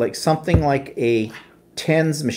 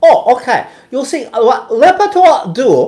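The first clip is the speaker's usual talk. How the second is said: very high, very loud put-on Chinese accent; 11 semitones higher, 10 dB louder than usual. Doing an impression of the doctor explaining Lipitor: put-on Chinese accent. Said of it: "pardon the impression of him".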